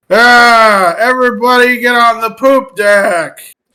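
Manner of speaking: sudden, instinctive loud, high yell, drawn-out "ah". In a role-play game, a character just waking up instinctively calls out, yelling. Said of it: "I instinctively yell".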